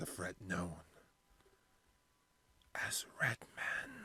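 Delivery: speaking in a hushed whisper. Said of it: "That's why I'm fucking whispering".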